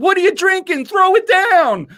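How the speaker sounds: shrill, very high scream. Retelling how Santa screamed up at you about your drink, imitating someone screaming. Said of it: "screaming up at me".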